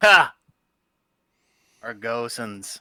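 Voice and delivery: derisive, scornful, dismissive scoff. Game narrator voices Thorson, scoffing at the one pointed out as leader. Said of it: "Thorson scoffs".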